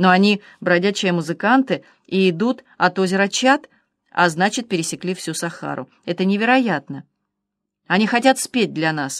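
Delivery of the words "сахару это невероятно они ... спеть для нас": ordinary delivery, nothing marked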